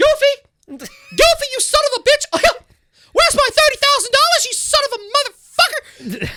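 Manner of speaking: loud, swooping shriek pitched very high. Retelling cosplaying as Mickey and running up to people, in Mickey Mouse voice. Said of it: "in Mickey's voice and going".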